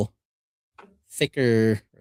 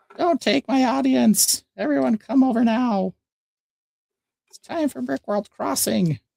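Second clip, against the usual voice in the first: high-pitched, put-on, mock yelling voice. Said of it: "yell at us and be like".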